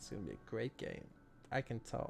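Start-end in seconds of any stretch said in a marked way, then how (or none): 0.0-1.0 hushed, dry, sarcastic whisper. Telling chat about a mid Nyx Assassin buying wards, sarcastic. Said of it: "Hear the sarcasm in my voice".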